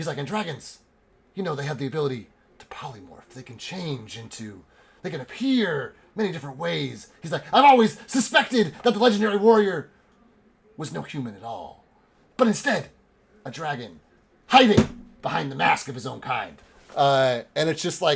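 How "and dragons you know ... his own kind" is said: put-on conspiratorial hushed whisper. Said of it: "whispers as if he's, like, being overheard".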